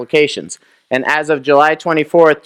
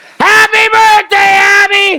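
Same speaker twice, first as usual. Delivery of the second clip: very high, loud, eager cheer with one word drawn out; 6 dB louder than usual. Showing the audience how to say the birthday greeting: loud and enthusiastic. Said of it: "little more enthusiasm".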